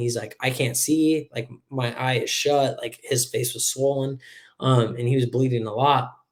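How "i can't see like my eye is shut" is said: put-on crying, man's weeping voice. Retelling what an injured man said, imitating him crying. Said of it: "he's crying".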